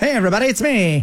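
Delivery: Mid-Atlantic accent. Discussing a War of the Worlds production, trying the Mid-Atlantic accent. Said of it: "was it Mid-Atlantic accent?".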